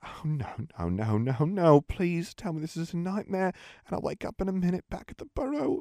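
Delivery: trembling voice. Ginny reacts to the words she has just overheard, speaking shakily. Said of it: "said Ginny shakily".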